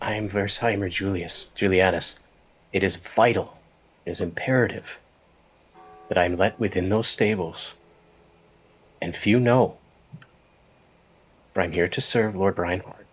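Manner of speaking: very quiet, hushed voice. A player's character steps forward to ask entry to the stables, very quiet. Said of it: "like very quietly say".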